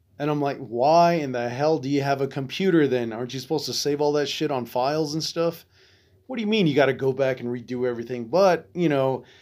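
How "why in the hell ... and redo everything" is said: usual speaking voice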